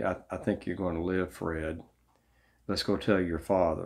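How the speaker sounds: mock-dry delivery. Retelling what a man told Fred after checking his leg, retelling a dry remark. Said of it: "But he said dryly".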